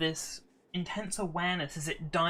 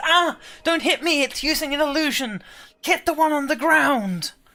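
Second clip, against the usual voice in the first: shrill cry, very high and very loud; 10 semitones higher, 11 dB louder than usual. The Attic Whisperer, struck for fourteen damage, cries out in Asbet's voice. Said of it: "lets out a cry in Asbet's voice".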